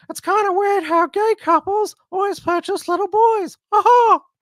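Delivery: very high-pitched, loud cartoon voice. Reading out a meme in a Mickey Mouse voice. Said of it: "my, uh, Mickey Mouse impersonation".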